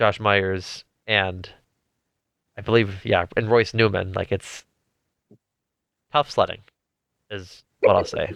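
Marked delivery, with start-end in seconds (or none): 4.3-8.3 stern, scolding, reprimanding tone. Rating offensive linemen to another speaker: reprimanding like a high school principal. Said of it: "You said that like a high school principal".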